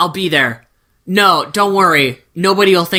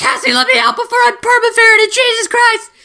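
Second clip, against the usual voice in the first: put-on very high, frantic scream, rising and panicked. Retelling the story's trapped ferret calling to Cassie: acting out a mental scream. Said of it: "mind scream to Cassie".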